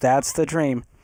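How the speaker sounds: flat, emotionless deadpan voice. Retelling what the bank clerk said about paying off the mortgage: imitating an emotionless bank clerk. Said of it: "No emotion on this lady's face".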